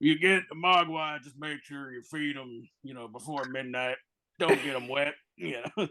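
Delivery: put-on old Western marshal character voice. Showing how they used to describe other movies, in Rooster Cogburn voice. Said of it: "describe other movies in the voice of Rooster Cogburn".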